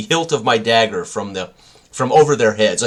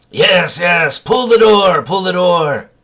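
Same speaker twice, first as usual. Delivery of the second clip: put-on high, slow goblin creature voice; 8 semitones higher, 6 dB louder than usual. Answering a goblin through a door in its language: goblin voice. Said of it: "I will speak back".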